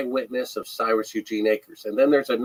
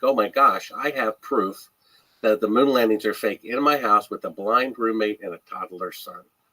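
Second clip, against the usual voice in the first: plain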